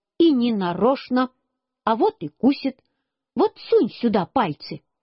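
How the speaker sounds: usual speaking voice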